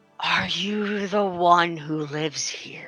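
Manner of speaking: rough, rasping creature voice. Telling a story, an unknown presence speaks to the listener, soft, raspy voice. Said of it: "a soft, raspy voice, goes".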